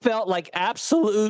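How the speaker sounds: voice cracking. Telling about getting food poisoning after dinner: voice cracking. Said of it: "oh, my voice cracked".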